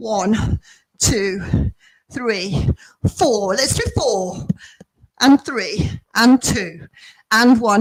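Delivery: slow, put-on posh voice. Counting down a windmill-arms exercise, in a put-on posh voice. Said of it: "trying to speak in a posh voice".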